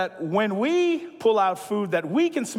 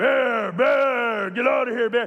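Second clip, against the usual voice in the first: put-on demonic voice; 3 semitones higher than usual. Retelling how a woman faced down a bear, [name]'s demonic voice. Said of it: "but that demonic voice".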